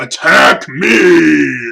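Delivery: very loud, rough, booming godlike voice. Stretching your arms out and looking at him, you speak in a loud booming godlike voice. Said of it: "this loud, booming, almost deity like voice comes out".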